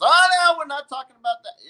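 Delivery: high, loud mock yell.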